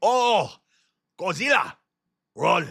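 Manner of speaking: very high, very slow dubbed-movie cry. Comparing an ai voice to a japanese movie: imitating a dubbed japanese movie. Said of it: "It's like a Japanese movie".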